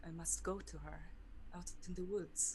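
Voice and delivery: muttering under breath. During a game scene, a character ignores a companion's urging, muttering under her breath. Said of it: "she's just muttering something under her breath".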